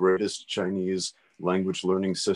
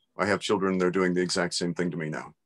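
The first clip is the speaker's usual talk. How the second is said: usual speaking voice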